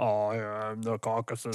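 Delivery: put-on deep bass voice. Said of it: "bring out the bassiness of my voice".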